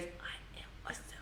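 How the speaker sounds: put-on soft, childlike, whispered echo.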